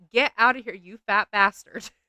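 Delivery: put-on yelled scream. Recalling being woken in the night by dad, retelling a scream. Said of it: "I hear my dad scream".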